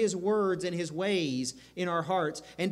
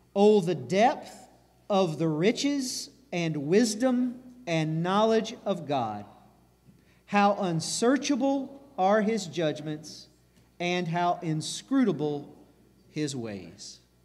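reading aloud very slowly and deliberately. Leading listeners in reading Romans 11:33 aloud together, reading very slowly. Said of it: "But real slowly, read this with me".

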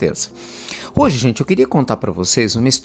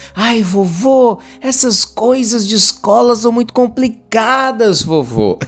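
put-on high six-year-old boy voice, vovô stretched out; 9 semitones higher than usual. Storyteller voices a grandson answering his grandfather, voice of a 6-7-year-old boy. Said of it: "Eu fazendo voz de menino de 6, 7 anos".

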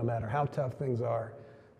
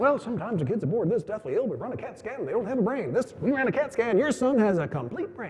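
high-pitched, proud explaining tone. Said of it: "They looked really proud".

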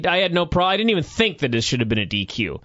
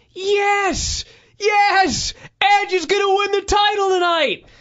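mock shrill, very high scream, stretched-out yes. Recounting two fans arguing during an Edge match; imitating a fan screaming. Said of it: "one of them was screaming".

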